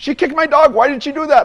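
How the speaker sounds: acted, very high, hostile, aggressive shouting. Retelling a wrong-number caller accusing her daughter of kicking his dog: retelling an aggressive yell. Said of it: "very aggressively yell at me".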